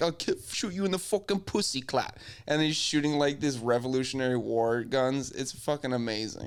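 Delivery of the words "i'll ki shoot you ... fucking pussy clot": higher-pitched, put-on London street accent. Retelling a redcoat soldier's threat to a friend, London street slang impression. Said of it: "a dude from Britain dressed up as".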